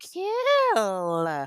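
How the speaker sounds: slow, drawn-out, voice cracks on "Kill". A podcaster thanks her listeners and gives a shout-out, voice cracking. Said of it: "my voice cracked".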